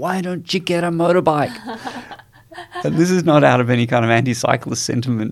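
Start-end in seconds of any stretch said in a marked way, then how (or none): 0.0-1.6 high-pitched, taunting yell mixed with laughter. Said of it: "yell, like".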